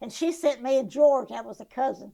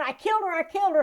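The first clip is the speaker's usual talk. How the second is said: mock frantic, panicked, repeated screaming outcry; 6 semitones higher than usual. Retelling how he ran around the house screaming: imitating someone screaming. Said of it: "around the house and screaming".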